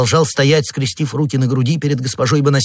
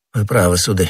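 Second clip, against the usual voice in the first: ordinary delivery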